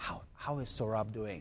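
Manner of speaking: put-on heartfelt, dead-serious, very earnest tone. Retelling a fan's question at a book signing: imitating an earnest, sincere question. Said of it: "in a very, very earnest, sincere way".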